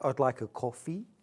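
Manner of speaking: put-on casual, newly acquired Australian accent. Retelling how Charlie orders in Australia, imitating Charlie's Australian accent. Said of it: "He picks up the accents so quickly".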